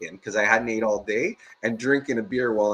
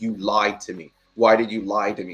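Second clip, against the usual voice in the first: mock-tearful, teary put-on voice; 2 semitones lower than usual. Retelling a customer's call the next day, imitating her in tears. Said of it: "she's in tears".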